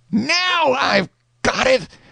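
sudden, high shout, words drawn out. Reading a story aloud, a character jumps up: shouting. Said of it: "up jumps Tom and shouts".

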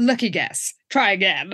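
put-on flat deadpan. Retelling Lila answering Jessica's psychic claim, Lila's deadpan. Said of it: "really growing on me with her deadpan style".

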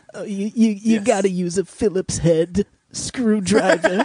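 high, drawn-out comic delivery. Doing an impression of Woody Allen doing Home Improvement: Woody Allen impression. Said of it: "my new impression, uh, Woody Allen doing Home Impre-, Improvement".

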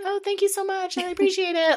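play-acted, very high, really nice, sweet tone. Retelling thanking the server at a restaurant: imitating own nice thanks. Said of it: "I was really nice about it".

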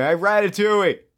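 put-on screaming. Retelling how drunk people at a casino show screamed: imitating people screaming. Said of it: "people just screamed at him".

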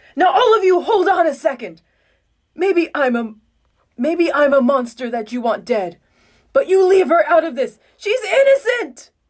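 upset, high-pitched, shouted protesting scream. Reading a story aloud as Eren defends her in court: Eren screaming, upset. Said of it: "An upset Eren screams out".

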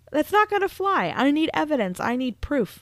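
flustered tone. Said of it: "He's like".

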